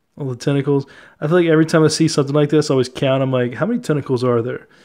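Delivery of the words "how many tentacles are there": plain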